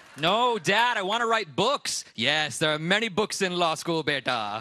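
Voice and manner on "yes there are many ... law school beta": put-on Indian-accented voice. Retelling how your dad answered you, in an Indian accent impression. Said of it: "I would like to apologize for using an Indian accent".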